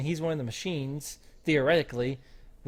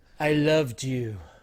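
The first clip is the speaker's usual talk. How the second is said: put-on creepy villain voice. Retelling a movie scene, imitating Cypher being creepy with Trinity. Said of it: "That's a good impersonation".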